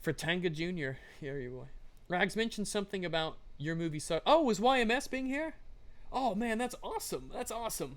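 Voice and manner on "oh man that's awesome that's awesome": high, excited voice cracking and breaking. Learning the creator of a favorite channel is here, voice cracking. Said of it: "my voice cracked".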